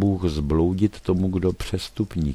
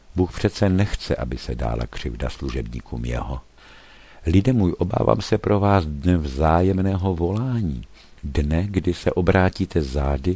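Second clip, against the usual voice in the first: ordinary talk, nothing marked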